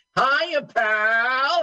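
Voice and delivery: pitched very high, "pal" drawn out. Retelling how a friend greets him on the phone: Dom DeLuise voice. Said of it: "he sounds just like Tom DeLuise".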